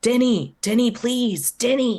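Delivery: high, desperate, full-throated scream at top of lungs. Graja screams for Denny from the next room, screaming at the top of her lungs. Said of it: "screaming at the top of her lungs".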